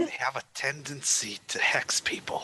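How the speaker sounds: loud, slow, leaning-in stage whisper. Leaning in to tell a companion a secret: whispering in character. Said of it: "lean into Edwin and just whisper".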